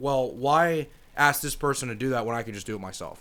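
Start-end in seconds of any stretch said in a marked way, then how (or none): none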